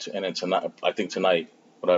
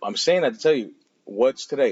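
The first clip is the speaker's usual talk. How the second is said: ordinary delivery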